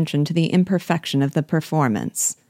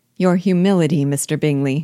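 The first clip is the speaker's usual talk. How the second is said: ordinary delivery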